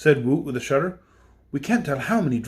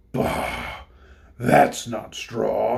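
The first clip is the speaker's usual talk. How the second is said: rough, creaky, low, very slow beast voice; 5 semitones lower than usual. Narrating a story, a beast reaches the Tin Woodman, in a harsh beast voice. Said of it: "said the harsh voice".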